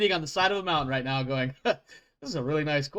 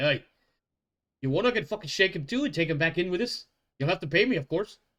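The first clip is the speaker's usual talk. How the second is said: put-on amused, mirthful dwarf accent; 3 semitones higher than usual. A game master voices the dwarf Theophric leaning in toward a player's character: mirthful dwarf voice. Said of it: "with a bit more mirth in his eyes".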